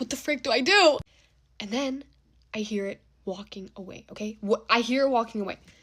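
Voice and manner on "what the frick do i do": mock desperate, at-a-loss, frantic panic. Retelling being stuck in a bathroom at night, acting out own frantic panic. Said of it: "I'm like frantic".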